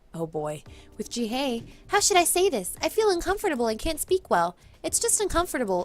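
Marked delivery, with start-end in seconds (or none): 1.8-5.8 high, put-on girl voice. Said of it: "her having a high-pitched voice".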